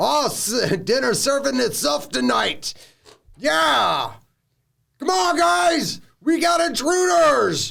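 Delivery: very high, slow, creaky, rough orc voice. Voicing the first orc, who spots intruders at camp: orc voice. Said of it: "the first orc sees you right there".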